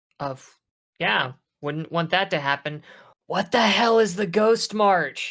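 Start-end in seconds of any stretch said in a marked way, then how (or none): 3.3-5.3 high, loud, pitched-up stage whisper. Speaking in character to the group, she asks a question in a stage whisper. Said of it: "She says in a stage whisper in character".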